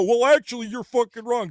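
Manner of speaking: high, nitpicking know-it-all voice. Complaining about always being contradicted: imitating Frog Tony. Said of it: "I gotta hear Frog Tony go".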